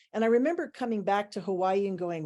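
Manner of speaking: ordinary talk, nothing marked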